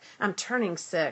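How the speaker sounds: normal talking voice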